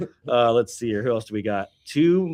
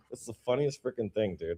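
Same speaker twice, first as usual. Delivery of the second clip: ordinary talk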